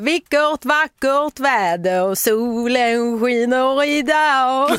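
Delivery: bad, slow attempt at Skåne accent.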